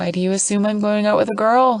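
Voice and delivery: chuckling, laughing while speaking. Reading a story aloud, a character asks back: chuckling while talking. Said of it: "still chuckling".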